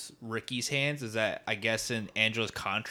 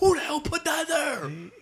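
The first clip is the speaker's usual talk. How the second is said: put-on angry, freaking-out outburst, higher and louder; 7 dB louder than usual. Retelling a movie scene where a man freaks out, throwing chairs: imitating a character freaking out. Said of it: "I love when that guy's freaking out".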